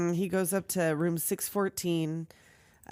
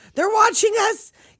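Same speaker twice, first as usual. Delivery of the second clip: put-on screaming, higher and louder; 11 dB louder than usual. Retelling how a character enters a scene: imitating Walensky screaming. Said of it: "Here he comes screaming".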